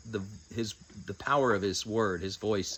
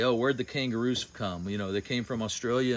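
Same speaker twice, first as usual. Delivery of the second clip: plain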